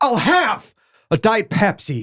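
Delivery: strangely stressed delivery with odd, misplaced emphasis. Imitating how an actor oddly reads a simple line: imitating an odd line reading. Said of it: "he'll read it like".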